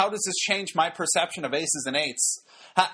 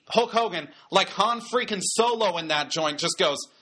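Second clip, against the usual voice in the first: ordinary delivery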